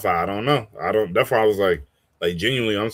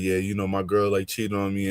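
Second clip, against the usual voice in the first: put-on fake crying, quieter; 4 dB quieter than usual. Retelling a clip where someone fakes crying: imitating Deshae's fake crying. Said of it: "Deshae did the fake crying".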